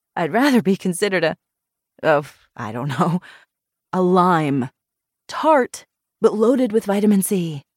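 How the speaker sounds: ordinary delivery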